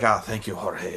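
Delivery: grand, lordly, aristocratic voice. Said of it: "he speaks very slowly".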